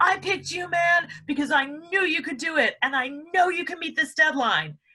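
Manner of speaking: put-on very high, high-pitched hollering yell. Acting out a skit where the boss speaks: imitating a boss yelling. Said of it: "even though he's yelling".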